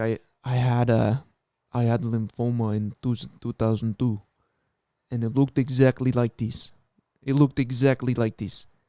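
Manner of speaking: put-on deep Russian accent. Retelling what another man said to them, in a gnarly deep Russian-like voice. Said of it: "gnarly, deep, like Russian voice".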